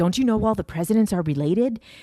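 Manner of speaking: mock high, frantic, freaking-out rant. Retelling a man getting heated in a conversation: imitating him freaking out. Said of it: "he really starts like freaking out".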